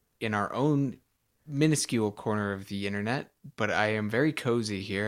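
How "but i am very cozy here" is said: ordinary delivery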